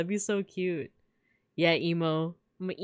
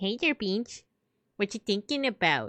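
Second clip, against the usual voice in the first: small, silly, put-on little puppet character voice. Puppeteering a toy while talking to Beans: little Mister Pancakes voice. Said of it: "I'll do that little voice".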